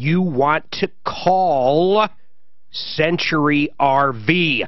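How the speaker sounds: very slow, deliberate, drawn-out salesman delivery. Recommending a dealer to folks listening: speaking slowly. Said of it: "I'm saying it slow so it sticks".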